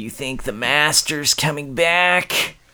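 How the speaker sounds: high cartoon voice. Doing an impression of the AC unit, in a Jack Nicholson type voice. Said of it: "Kinda that voice".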